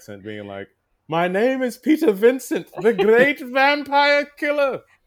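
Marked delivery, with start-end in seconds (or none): 1.1-4.8 put-on English accent. Retelling standing on a chair in class: British accent. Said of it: "speaking in a British accent".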